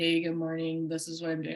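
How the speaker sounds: low, flat, dull, droning monotone. Speaker shows how not to open your stories on camera: flat, boring monotone. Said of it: "like that's freaking boring".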